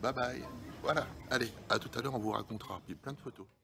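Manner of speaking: quiet, soft speech.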